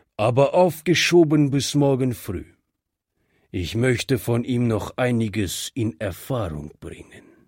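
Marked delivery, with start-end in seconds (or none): none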